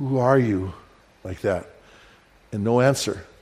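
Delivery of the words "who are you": put-on, trembling, quivering, terrified voice. Retelling a frightening encounter in the dark, reenacting a quivering, terrified voice. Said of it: "my voice was quivering".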